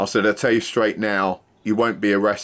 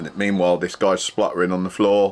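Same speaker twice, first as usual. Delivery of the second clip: normal talking voice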